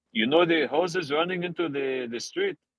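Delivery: put-on Mexican accent. Retelling what a man at the door said: imitating a man's Mexican-sounding accent. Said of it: "This is what he sounded like".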